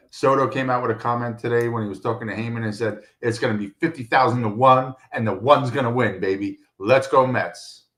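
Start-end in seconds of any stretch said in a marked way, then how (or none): none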